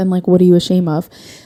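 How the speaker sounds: ordinary delivery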